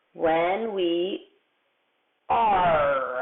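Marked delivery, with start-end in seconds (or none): 2.3-3.2 word 'are' stretched out in pirate style. Showing off a pirate's favorite word, with "are" in a pirate voice. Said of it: "That's why I say it like a pirate".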